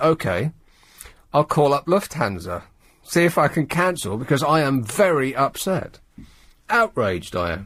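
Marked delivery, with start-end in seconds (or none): none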